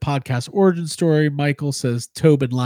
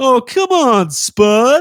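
high squeaky voice, dragged out; 9 semitones higher, 7 dB louder than usual. Acting out Slimer calling Peter for book money: bad Dave Coulier impression. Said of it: "Bad, bad Dave Coulier impression".

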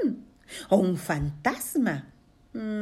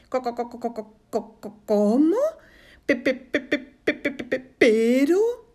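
loud stuttering, repeating first syllables; 5 semitones higher, 5 dB louder than usual. Teaching children how to stutter like a story character; stuttering. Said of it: "vamos a aprender a tartamudear como Matías".

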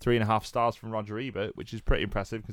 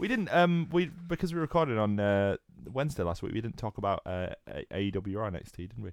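ordinary talk

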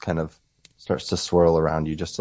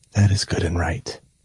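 whispering. A character speaks one last time as the mist fades, whisper. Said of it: "one last whisper".

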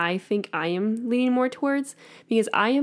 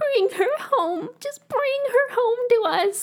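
mother's voice, pitched very high. Retelling a video clip of his mom, imitating his mom. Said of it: "That's a really good impression".

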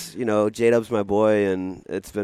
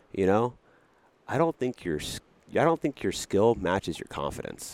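mock deadpan, dry and unbothered, no reaction; 7 dB quieter than usual. Retelling how J Dub answered Grant's boast: imitating J Dub's deadpan. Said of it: "J Dub just deadpan looks at him and goes".

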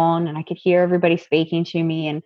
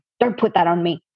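put-on sharp snapping tone. Retelling what she said when he tried to put something on her face, snapping. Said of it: "I didn't mean to snap at you".

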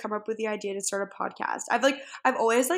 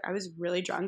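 ordinary talk

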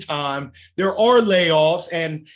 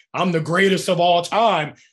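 ordinary delivery

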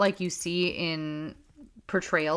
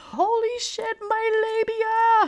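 mock very high, slowly stretched scream; 3 dB louder than usual. Retelling a moment during pushing: retelling a scream. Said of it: "I actually screamed".

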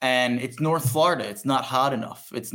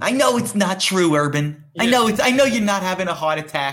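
fake New York accent, loud and scolding; 6 semitones higher, 5 dB louder than usual.

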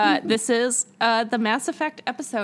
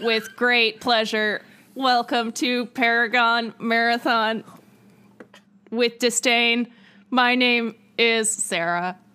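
very slow, deliberate alien voice, every word drawn out. Introducing the podcast and giving a name, in an Elcor voice. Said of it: "I'm being an Elcor".

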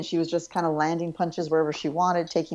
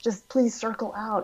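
high, pleading, exasperated tone; 5 semitones higher than usual. Retelling a corner coach pleading with his fighter: imitating Jason Parillo pleading. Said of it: "pleading with her".

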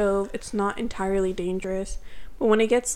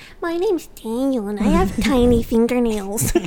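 mock nasal, rough-throated imitated voice; 5 dB louder than usual. Mimicking a friend right after he describes his own voice: imitating Daniel's nasally voice. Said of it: "I sound like a little nasally. And a little rough in the".

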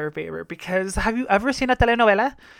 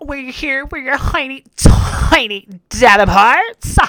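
put-on annoying voice, higher and louder; 5 semitones higher, 8 dB louder than usual. Retelling an annoying line from someone whose voice bugs you: Daya voice. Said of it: "Daya's voice is annoying as fuck for me".

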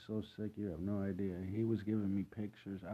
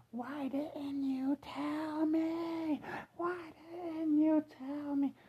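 shrieking very high, "me" stretched long; 5 dB louder than usual. Retelling how the mother came around the corner: imitating mother screaming. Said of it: "screaming at the top of her lungs".

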